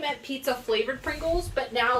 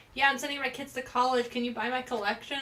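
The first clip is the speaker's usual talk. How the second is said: ordinary talk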